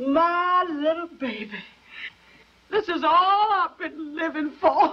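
tearful, weeping speech. A mother speaks to her child as the family gets ready to go, crying. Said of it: "Don't cry, Ma".

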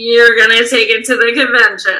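put-on phoney, obnoxious voice. Retelling how an interviewer repeated a candidate's words: imitating a fake, obnoxious tone. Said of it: "so fake and obnoxious".

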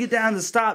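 screaming. A youth leader retells people on the slopes screaming, retelling people screaming. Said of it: "people start screaming, like".

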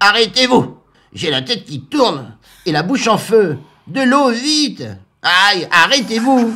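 put-on totally drunk, high witch voice wailing in pain. Reading a story aloud: the drunk witch crashes into the tower walls, crying out. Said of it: "[name] la sorcière".

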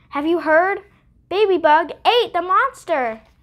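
loud, high-pitched yelling. Narrator reads an inchworm spreading news to everyone: shouted. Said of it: "He shouted".

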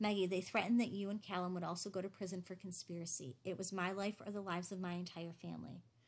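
ordinary delivery

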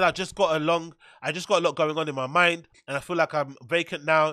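usual speaking voice

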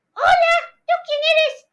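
high, loud puppet voice.

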